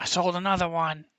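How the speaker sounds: high, yelled calling voice. Voicing a character calling back after selling a potion: yelling back. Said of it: "and she s-, yells back".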